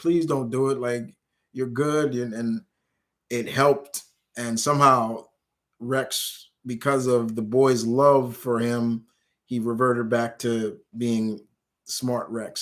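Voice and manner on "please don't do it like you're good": desperate, pleading voice. Retelling a story where someone begs Rex not to eat him; imitating someone pleading. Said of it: "And he's just pleading with him".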